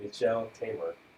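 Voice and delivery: ordinary talk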